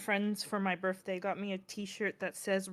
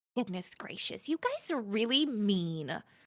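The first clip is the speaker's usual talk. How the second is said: put-on slightly Valley Girl, girly, swooping accent; 3 dB quieter than usual. The speaker demonstrates a character's accent to others in a girly Valley Girl accent. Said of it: "Kind of girly, Valley Girl a little bit".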